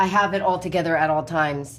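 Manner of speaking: ordinary talk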